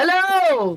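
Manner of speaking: very high, loud shouted yell. Greeting a stranger with a hearing problem: yelling a greeting. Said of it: "Why are you yelling at me?".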